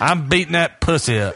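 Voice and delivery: put-on, fake country accent. Joking about what to say during sex: put-on country accent. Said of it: "I'm getting real country".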